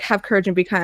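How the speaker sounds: ordinary talk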